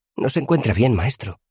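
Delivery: high, concerned, fretful voice. Reading a novel, Simon speaks to the master, in a high worried voice. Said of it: "dijo Simon con una voz aguda que denotaba preocupación".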